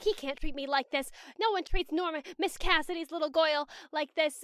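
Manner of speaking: put-on fuming grumble. Retelling Norma on a train platform: imitating Norma angrily muttering. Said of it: "Norma's just like".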